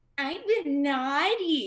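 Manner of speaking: put-on voice sounding like a young preteen kid. Showing how the answer must be said: like a preteen. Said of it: "make sure you sound like a preteen".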